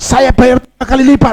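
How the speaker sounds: loud angry tone, pitched high.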